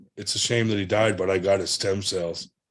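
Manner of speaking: ordinary talk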